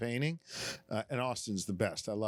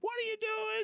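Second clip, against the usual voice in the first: play-acted, very high-pitched screaming yell. Retelling coaching his boys from the sideline: imitating own past screaming. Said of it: "I'd be on the sideline screaming".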